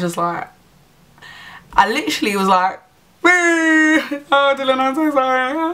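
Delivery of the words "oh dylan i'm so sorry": mock very high, tearful, drawn-out sobbing oh. Retelling apologizing to a man down on one knee in a puddle, imitating own hysterical crying. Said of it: "I was literally crying".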